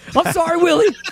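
very high, loud, squeaky mock put-on voice.

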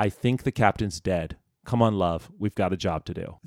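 whispered voice. Retelling what one flight attendant whispered to another: imitating a whisper. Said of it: "He whispers".

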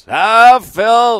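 mock booming yell. Retelling how a rookie interrupted an interview from across the room, imitating Paul Cotter's booming yell. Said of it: "like a booming voice yelling across the room".

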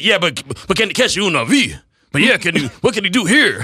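play-acted angry, exasperated, pressing tone. Imitating a co-host during an interview: imitating someone sounding mad. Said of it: "Damon just sounded so mad the whole time".

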